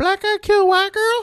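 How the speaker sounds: put-on very high, loud young schoolkid voice. Retelling a fifth-grade reaction to the news: imitating own fifth-grade self. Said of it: "I don't know why I sound like that".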